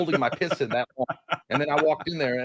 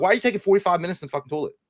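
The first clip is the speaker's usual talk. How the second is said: angry outburst, words rattled off fast; 4 semitones higher than usual. Telling about getting mad at her for taking so long in the toilet: mock-angry outburst. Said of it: "I got mad at her the other day".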